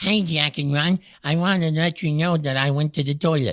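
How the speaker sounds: changed, put-on disguised voice, hiding the speaker. Show host demonstrates how an anonymous caller could change their voice, disguised voice. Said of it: "You can change your voice. You can sound like this".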